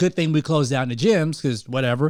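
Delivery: ordinary delivery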